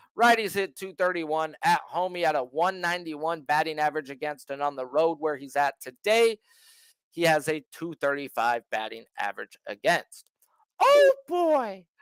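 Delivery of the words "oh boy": high, loud squeaked-out delivery. Between pitching stats, breaking into a Mickey Mouse voice. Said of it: "y'all better get used to that Mickey Mouse voice".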